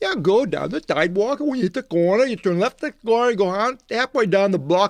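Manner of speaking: high-pitched, fast Boston accent.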